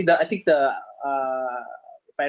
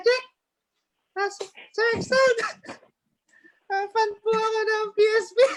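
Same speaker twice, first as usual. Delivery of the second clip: put-on tiny voice, higher pitch. Retelling how Quicks asked to meet them: imitating Quicks' tiny voice. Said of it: "That's Quick's voice".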